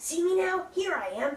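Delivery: small, high cartoon sidekick-style character voice. Asking others whether they can see him, in the little guy from She-Ra voice. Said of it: "it's like the little guy from the end of uh".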